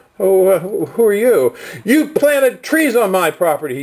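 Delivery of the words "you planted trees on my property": furious, high-pitched, angry accusatory shout. Retelling a man from a pickup truck confronting the speaker, imitating his screaming. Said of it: "He starts screaming at me".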